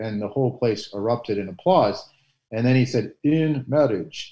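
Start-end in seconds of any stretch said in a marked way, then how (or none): 3.2-4.3 put-on Polish accent, pitched a touch high. Retelling a homily at an outdoor ballpark mass: John Paul II Polish accent. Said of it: "he kinda said in his Polish accent".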